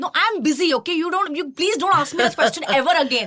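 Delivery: mock exasperated, sharp, heated, high-pitched outburst. Retelling own answer after starting to shout: retelling own past shouting. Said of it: "I just started shouting".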